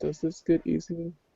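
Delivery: very quiet, soft, hushed aside. Narrating a man at a coffee counter who looks at another and asks, hushed tone. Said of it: "in a kind of a hushed tone".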